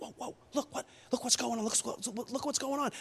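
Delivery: soft, breathy whisper under the breath. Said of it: "they're probably whispering like".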